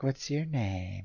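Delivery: coy, flirty, seductive tone. Retelling how someone flirted with an inspector: imitating Lily's seductive tone. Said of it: "she's all, like, seductive".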